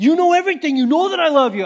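very loud, high, testy, chippy tone. Retelling how they used to read Peter's reply: acting chippy. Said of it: "like Peter's a little chippy about it".

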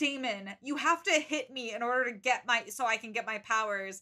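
normal talking voice

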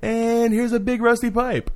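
very high, slow, cartoonish tour-guide voice. Speaker retells a man acting as a tour guide, in a South Park voice. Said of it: "he had like the South Park voice".

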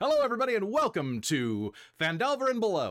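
emphatic, very high, swooping show-host voice. Redoing the show's opening welcome after a flat first try: more emphatic, energetic welcome. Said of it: "let me put a little more emphasis into this".

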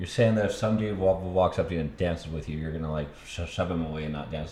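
usual speaking voice

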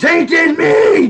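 put-on, very high, screeching cry. Asking for the clip of Bob: imitating Bob screaming. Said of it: "Bob, you know, screaming".

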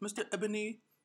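put-on high-pitched Indian accent impression. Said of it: "Is this your Indian accent?".

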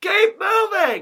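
impatient, high-pitched, slow, loud shout.

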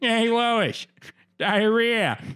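very high, goofy cartoon dad voice. Asked to do an impression after claiming to have a good one, give a Peter Griffin impression. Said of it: "I actually had a good Peter Griffin".

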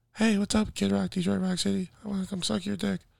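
put-on rough, high, creaky women's voices. Playing four women in a role-play after being asked for an impression: impression of four women. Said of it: "Be four women in a sex tape".

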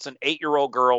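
usual speaking voice

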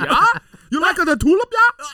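put-on Dutch accent. After announcing the bit to the others, hot dutch accent. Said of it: "I should do a hot Dutch accent now".

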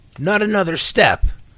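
shrill, very loud, frightened, cracking shout. A startled man yelling at someone who drew on him fast, voice cracking with fear. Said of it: "he yelled at Sam, his voice cracking slightly with fear".

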